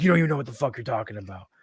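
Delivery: put-on angry, dismissive tone. Speaker retells a country-music fan's reply in their argument, imitating an angry man. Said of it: "he would get so fucking mad".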